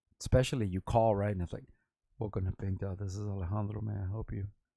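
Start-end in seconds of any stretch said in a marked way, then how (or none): 2.2-4.5 put-on seductive, sexy phone voice. Speaker retells answering a customer's call at work, in his sexy phone voice. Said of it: "I've been told that I had a sexy voice".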